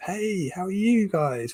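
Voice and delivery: put-on American accent. While explaining body language, the speaker greets the listeners in an American accent. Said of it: "I don't know why I went to American accent there".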